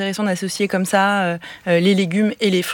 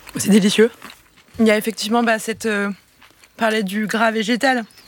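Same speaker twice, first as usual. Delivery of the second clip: talking with mouth full; 2 semitones higher than usual. Speaker tastes a dish and describes it, talking with mouth full. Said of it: "je parle la bouche pleine".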